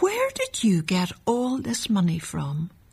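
soft, gentle tone. Monsieur Givet questions the boy about the money, said gently. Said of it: "he said gently".

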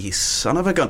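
usual speaking voice

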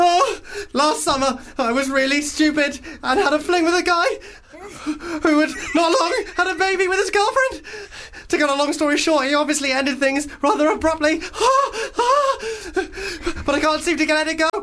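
very high, breathless, terrified panic. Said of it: "she's been chased through the woods".

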